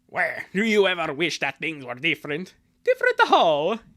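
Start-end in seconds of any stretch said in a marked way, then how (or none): 0.2-2.6 villainous cartoon voice. Redoing a cartoon dialogue line, switching the character's voice to Wario. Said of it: "So I'm gonna change it to Wario".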